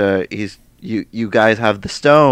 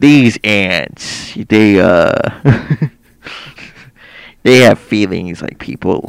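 clumsy, drawn-out, bad put-on actor voice; 4 dB louder than usual. Imagining narration for a ride: horrible Michael Douglas impression. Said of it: "That was a horrible Michael Douglas impression".

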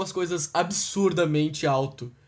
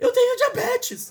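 put-on very high, tiny little child's voice; 4 dB louder than usual. Retelling what a child holding a noisy toy said, Gabi's little voice. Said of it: "Com aquela vozinha".

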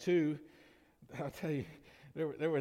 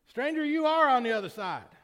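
very high, shrill, booming loud yell; 10 semitones higher, 9 dB louder than usual. Telling a joke, one stranger answers across a river: acting out a yell. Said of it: "yelled back at him".

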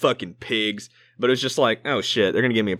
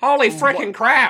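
very high, loud, goofy cartoon voice, shouted; 5 dB louder than usual. Debating who would win a fight, a friend gives a Peter Griffin impression. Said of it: "That's what he'd say".

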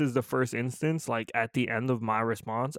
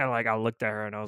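ordinary talk, nothing marked

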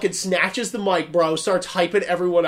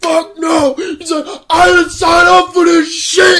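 imitated man's scream, higher and louder; 11 semitones higher, 9 dB louder than usual. Retelling how a big volunteer reacted to the scene: imitating a man screaming. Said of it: "He's screaming".

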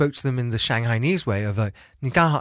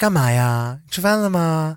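dainty, effeminate, pitched-up speech with "ya" endings; 6 semitones higher, 3 dB louder than usual. Speaker describes how people talk, mimicking dainty, effeminate speech. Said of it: "like dainty, effeminate way".

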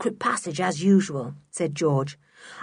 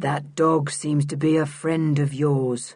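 flat monotone, lower pitch; 5 semitones lower than usual. Reading a story, voicing a man who stops the children: monotone voice. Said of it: "in his curious monotone of a voice".

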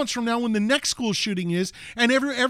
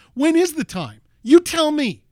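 loud, swooping, full voice, all out; 4 semitones higher, 6 dB louder than usual. Asked whether they want the line in full voice, delivering it in full voice. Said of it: "Here's full voice".

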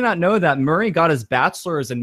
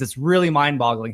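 ordinary talk, nothing marked

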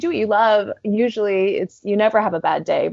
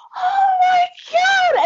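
shrill, very high, shrieking screaming. Retelling two huge German guys running up in Edinburgh, retelling them screaming. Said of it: "They started screaming like".

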